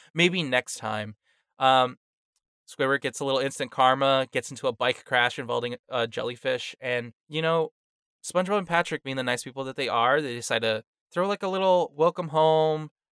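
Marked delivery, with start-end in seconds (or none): none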